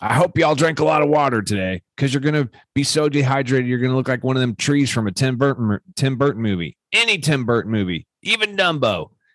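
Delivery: worked-up, high-pitched, upset ranting tirade. Retelling what a man yelled at people who had to run laps, acting out an upset rant. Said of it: "he's getting all upset and he's just ranting".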